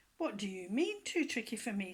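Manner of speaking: cross, annoyed tone. Reading a story aloud, a fox offended by the rabbit: cross. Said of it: "said Brer Fox crossly".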